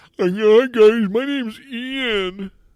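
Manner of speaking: squeaky, very high, crawling-slow, drawn-out host voice. Doing both parts of the show alone, imitating Ian. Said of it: "That's not how I sound".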